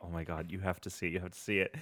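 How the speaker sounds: barely audible, hushed, very quiet half-whisper. Retelling how someone half-whispered to friends about a video: imitating Tuna half-whispering. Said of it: "whispering to Matt and Chris".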